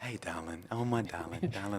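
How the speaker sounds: tender, soft, cuddly, affectionate tone. Retelling how he spoke to his young daughter: imitating own gentle tone. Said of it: "like this".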